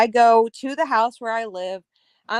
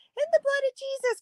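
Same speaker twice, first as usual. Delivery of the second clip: mock crying voice, higher pitch and quieter; 5 dB quieter than usual. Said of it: "I'm crying".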